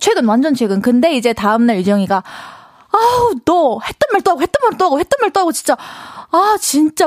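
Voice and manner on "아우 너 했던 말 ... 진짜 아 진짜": irritated, annoyed griping, pitched up. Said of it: "막 이러면서".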